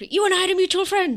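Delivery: rapid-fire, very high-pitched, shrill and loud. Quoting how he delivered the mutual-friend line, said really quickly. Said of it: "he said that really quickly".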